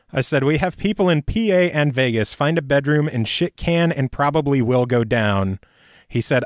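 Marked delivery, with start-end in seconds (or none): none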